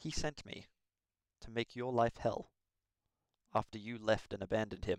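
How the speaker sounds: hushed, quiet half-whisper. Voicing a character who walks up and half-whispers in another's ear: half-whispering in someone's ear. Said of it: "walks up to you and whispers in your ear".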